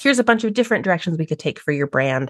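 ordinary talk

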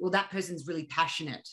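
ordinary talk, nothing marked

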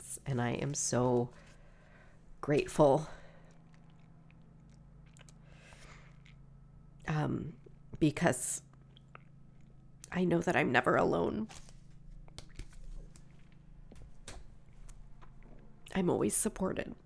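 speaking through tears. Speaker addressing viewers about the cards, crying while speaking. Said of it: "Sorry for the crying".

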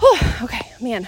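winded, breathless, catching air while speaking. Talking during her walking challenge, the speaker is out of breath. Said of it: "I'm a little bit out of breath".

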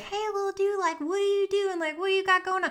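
very high, weird, odd critter-talk voice. Describing how someone talks to a squirrel seen outside the window, in a weird voice. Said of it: "talk to him in a weird voice".

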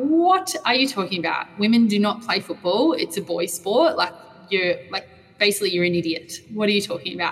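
ordinary talk, nothing marked

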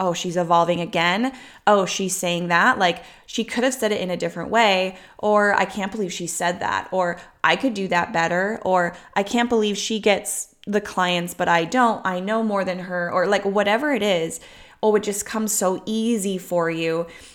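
ordinary talk

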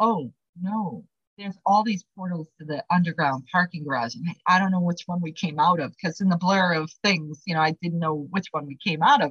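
plain

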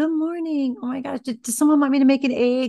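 affectionate, kind, loving voice. Retelling how the day starts with the kids: imitating own loving, kind tone. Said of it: "I start out the day very loving and kind".

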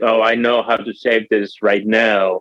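ordinary delivery

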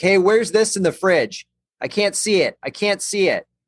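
put-on yelling, pitched high.

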